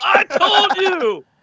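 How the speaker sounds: very high, victorious, triumphant holler. Doing an impression of AJ arriving and shouting at the group: imitating AJ shouting I told you. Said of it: "Can I do my impression?".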